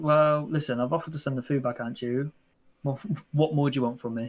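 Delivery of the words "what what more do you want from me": ordinary talk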